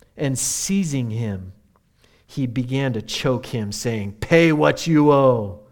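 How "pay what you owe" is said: voice sounding like a pirate. Reading a parable, a servant seizes a fellow servant over a debt: pirate-like voice. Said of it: "I sound like a pirate there for a moment".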